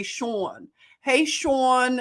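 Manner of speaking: slow Philly accent with drawn-out name. Showing how people in Philly say Sean and Sherry, Philly accent. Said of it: "That's how the Philly Philly accent says Sherry".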